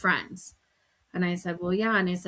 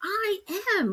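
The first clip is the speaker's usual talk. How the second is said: put-on snippy, sassy tone, very high; 14 semitones higher than usual. A mother retells her daughter talking back during a game: mock-sassy reply. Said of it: "like all sassy".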